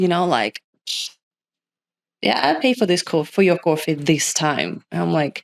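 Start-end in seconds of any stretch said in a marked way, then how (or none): none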